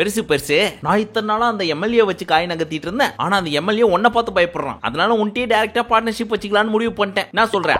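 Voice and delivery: plain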